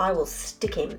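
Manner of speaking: ordinary delivery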